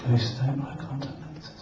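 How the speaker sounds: ghostly, slow, soft whisper, barely voiced.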